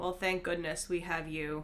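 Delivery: dry, flat, absolutely deadpan and expressionless. Speaking in character to another character who offers healing: deadpan. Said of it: "absolutely deadpan say".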